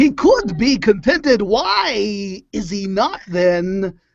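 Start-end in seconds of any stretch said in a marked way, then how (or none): 1.4-3.9 very slow, exaggerated, why stretched long with swinging pitch. Acting out lines as someone doing a bad impression: bad Christopher Walken impression. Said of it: "my impression of someone doing a bad impression of Christopher Walken".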